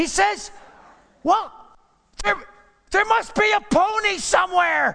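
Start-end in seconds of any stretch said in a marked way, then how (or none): 1.2-5.0 put-on very high, thrilled boy's shout. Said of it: "And the boy shouts out".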